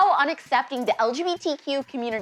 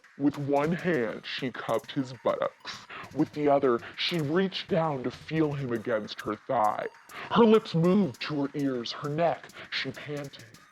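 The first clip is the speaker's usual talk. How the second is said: electronically deepened voice; 11 semitones lower, 6 dB quieter than usual. Host reading racy lines from a book aloud, in an artificially deepened voice. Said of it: "have producer Abigail deepen my voice".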